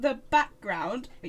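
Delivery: ordinary delivery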